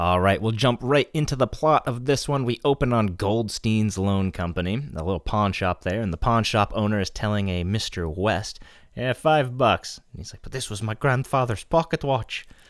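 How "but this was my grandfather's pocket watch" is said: put-on speaking in an Irish brogue accent. Speaker recapping a story's plot, quoting a character's line in an Irish accent. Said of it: "You should keep up that Irish accent".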